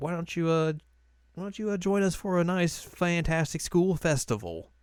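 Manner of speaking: put-on American southern accent. A host closing the show and inviting listeners back, in a southern accent. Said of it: "I like how you got a southern accent".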